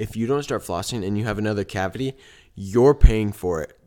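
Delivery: acted, grave, stern, very serious voice. Retelling what he told the speaker, imitating his very serious voice. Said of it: "in a very serious voice".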